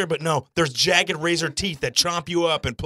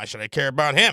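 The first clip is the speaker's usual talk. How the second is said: snide, mean, low-pitched throwaway aside; 4 semitones lower than usual. Retelling what Tiffany said under her breath: imitating Tiffany muttering meanly. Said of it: "under her breath, sort of mean".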